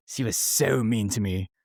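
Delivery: slightly British-sounding accent. Agreeing that someone was once mean to them, British-sounding accent. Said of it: "I is that your British accent?".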